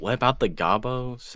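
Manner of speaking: hushed whisper. In a role-playing game, asking another character a question, whispering. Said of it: "I whisper".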